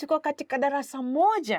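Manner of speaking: surprised tone, rising toward the last words. Teaching a Swahili sentence, the speaker shows the voice raised at the end. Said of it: "you kind of raise your voice a little bit".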